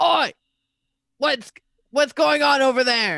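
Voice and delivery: very loud, high-pitched shout. Voicing a squadron of guards who spot the players: shouting guards. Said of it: "a squadron of guards go".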